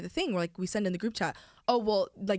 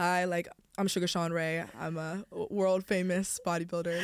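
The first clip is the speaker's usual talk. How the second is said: very low, cool, collected bodybuilder dad voice. Imitating how a dad introduces himself: imitating a dad talking very low. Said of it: "he talks very low".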